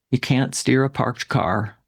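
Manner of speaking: ordinary talk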